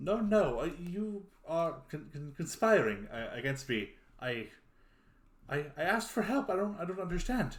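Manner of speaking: high-pitched flustered voice. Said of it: "He goes".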